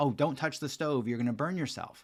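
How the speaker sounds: ordinary delivery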